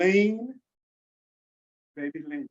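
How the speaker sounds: super relaxed, very chill, easygoing laid-back voice. Showing the audience what to tell themselves: very chill voice. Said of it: "tell yourself in the most chill voice".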